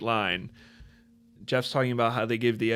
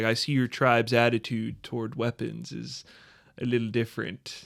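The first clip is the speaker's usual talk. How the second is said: ordinary delivery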